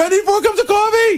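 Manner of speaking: very high-pitched scream. Retelling how someone screams his breakfast order while running in: imitating Benji screaming. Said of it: "he screams his order out".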